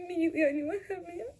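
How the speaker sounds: high, tearful sobbing voice, breaking down crying.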